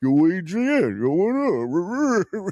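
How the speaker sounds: put-on very slow, high punch-drunk boxer voice, stretched upward. Imitating a punch-drunk boxer from the movie: Rocky impression. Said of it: "he's playing a boxer who's punch drunk".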